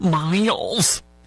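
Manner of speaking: put-on Michigan accent. Saying a restaurant owner's name aloud: put-on Michigan accent. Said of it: "that's my Michigan accent".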